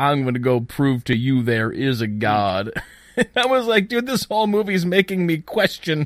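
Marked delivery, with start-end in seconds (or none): 0.0-2.7 horrible, clumsy fake Bayou accent. Mock a guy in a movie you watched, doing Bubba's horrible Bayou accent. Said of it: "in his horrible like Bayou accent".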